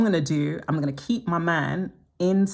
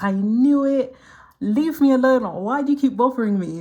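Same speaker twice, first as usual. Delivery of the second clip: put-on miserable, wounded, unhappy, high and raised; 8 semitones higher, 6 dB louder than usual. Retelling a woman's reply after losing her husband, imitating an unhappy woman. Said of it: "she was so unhappy".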